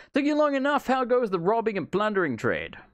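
put-on elderly British accent. Reading a game character's dialogue aloud, old British voice. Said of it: "I'm doing an old British voice".

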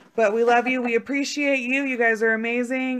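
loud, high-pitched calling out. Signing off while running out of time: talking fast. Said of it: "so I'm talking fast".

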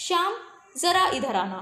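slow, brief pause after Shyam. Showing where a comma goes, with a short pause after Shyam. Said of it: "थोड़ा सा रुकी और मैं आगे चल दी".

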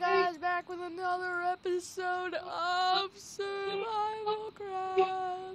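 said mid-yawn. Opening another episode of SurvivalCraft for viewers, yawning. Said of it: "That was my yawning voice".

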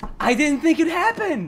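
stunned, excited outburst, high with wide pitch range.

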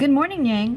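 trembling, unsteady voice. The narrator greets Yang in the story, tremulous. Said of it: "I greeted her tremulously".

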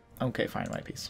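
put-on upset, dejected voice. Imagining the enemy nation finally giving in to peace: mock-dejected and upset. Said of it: "all dejected and upset".

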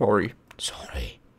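creepy voice. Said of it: "I just managed to sound creepy right there".

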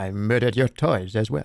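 put-on French spy accent. Retelling what a Frenchman told him, in a put-on French spy accent. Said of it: "Is that your French".

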